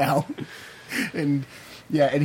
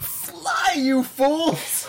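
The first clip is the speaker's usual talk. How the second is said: piercing, very high, shrill put-on yell; 13 semitones higher than usual. Recounting a story where a woman is swallowed by a grizzly shark, retelling a shout. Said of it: "she just shouts".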